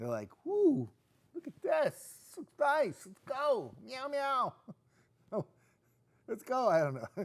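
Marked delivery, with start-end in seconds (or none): 0.4-6.7 bad, very high, drawn-out cat voice. Describing cats looking out a window, imitating a cat, not very well. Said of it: "My impersonation of a cat is not very good".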